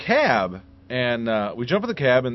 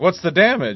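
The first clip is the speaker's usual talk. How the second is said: normal talking voice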